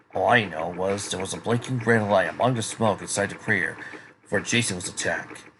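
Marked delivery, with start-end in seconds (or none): none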